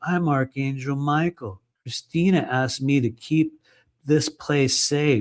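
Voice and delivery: ordinary talk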